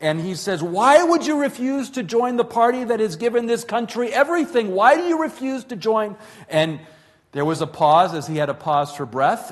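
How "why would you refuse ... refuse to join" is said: aggravated, angry, raised voice, very high. Retelling a man questioning the speaker's grandmother, retelling a man raising his voice. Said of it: "he started raising his voice".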